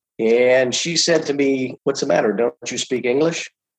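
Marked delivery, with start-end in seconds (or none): 1.9-3.5 put-on accent from Peru. Retelling the chef's reply to the speaker's question, in a thick Peruvian accent. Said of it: "In a very thick Peruvian accent".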